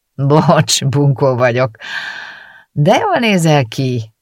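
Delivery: slow, with a grin in the voice. Someone comes over to the narrator at the lake before sitting down, grinning. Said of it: "mondta vigyorogva".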